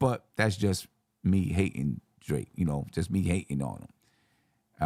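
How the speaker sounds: plain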